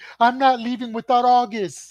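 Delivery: put-on shrill, very high kid yelling at top of lungs. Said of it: "He's yelling off the top of his lungs".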